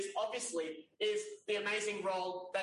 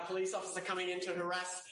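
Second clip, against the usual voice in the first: normal talking voice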